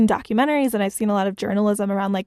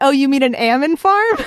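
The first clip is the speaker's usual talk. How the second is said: put-on almond in a pitched-up Northern California accent; 5 semitones higher, 6 dB louder than usual. Retelling how people corrected the speaker's pronunciation, in a Northern California accent. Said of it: "the n- Northern California accent".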